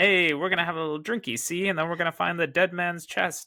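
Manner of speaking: put-on high-pitched, tough old-time gangster voice. Two friends mock how a comic character talks, gangster Jack Sparrow voice. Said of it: "now he sounds like a gangster".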